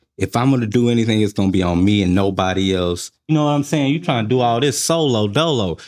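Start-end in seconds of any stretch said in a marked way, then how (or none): none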